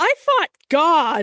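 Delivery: puppet voice. Acting out Big Bird in imagined therapy with Elmo: acting as Big Bird. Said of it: "Big Bird's like".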